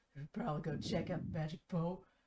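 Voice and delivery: loud, badly hidden stage whisper. Voicing a drunk sailor whispering to his buddy: loud stage whisper. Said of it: "he thinks he's whispering, but you can definitely hear him".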